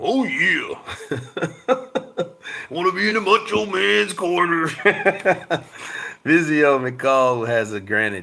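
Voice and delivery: put-on British accent impression.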